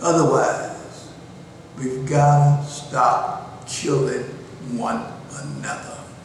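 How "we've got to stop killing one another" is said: very slow, deliberate, each word spelled out. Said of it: "see how slow and deliberate I'm talking".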